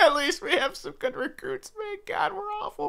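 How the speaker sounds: very high, hushed, soft speech with giggling. On a game stream, speaker reviews their team's awful season, laughing uncontrollably. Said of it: "I can't stop laughing".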